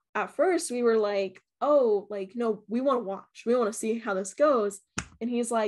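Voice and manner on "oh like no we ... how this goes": ordinary talk, nothing marked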